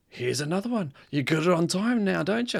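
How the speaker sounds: mock shouted jab, high and obnoxious yelling. Retelling delivering newspapers to a woman who complained: imitating own past yelling.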